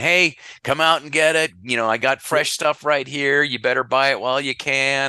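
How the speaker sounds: high, loud street-vendor holler. Retelling a man yelling at everybody from a produce truck window, retelling a vendor's yelling. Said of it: "yelling at every, everybody in Italian".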